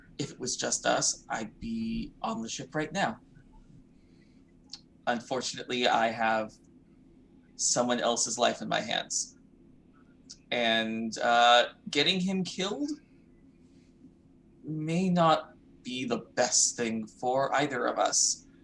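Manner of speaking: quiet, hushed half-whisper. In a role-play scene, a character leans in and half-whispers to another character. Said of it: "leans in and whispers to uh to Trash".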